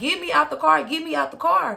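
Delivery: put-on raspy, rough, high pleading cry. Retelling calling to the other driver from the crashed car: retelling own scream. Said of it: "So I'm screaming to her too".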